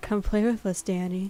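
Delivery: put-on creepy voice of children together. Voicing twins asked to quote a film line: creepy Shining twins voice. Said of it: "Twins stare up in unblinking unison".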